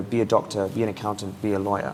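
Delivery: ordinary delivery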